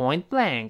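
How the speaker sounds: "point blank" with stress on blank. Chinese lesson explaining the phrase point blank: stress on the word blank. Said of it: "这个blank 重读".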